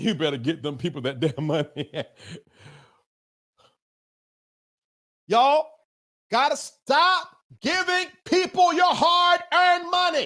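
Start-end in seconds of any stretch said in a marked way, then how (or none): 5.3-10.3 worked-up, impassioned, heated rant with rising pitch. Speaker admits getting upset and addresses the audience, yelling. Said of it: "I'm yelling".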